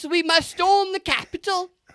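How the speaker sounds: very high, squeaky, put-on British accent. Describing an imagined bad undercover agent at January sixth, British SAS guy voice. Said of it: "and he talks like this".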